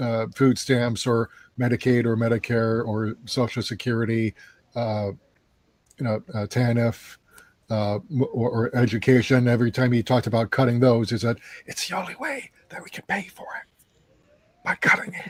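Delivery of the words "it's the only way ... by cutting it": hushed, confiding, secret-sharing whisper. Quoting what he always said, lowering the voice to an imitated whisper. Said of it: "lower his voice to a whisper".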